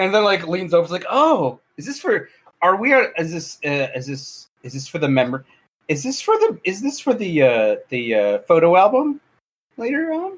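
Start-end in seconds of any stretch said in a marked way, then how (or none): 1.1-10.4 slow, swooping, drawn-out flirtatious tone. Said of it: "look flirtatiously a little bit".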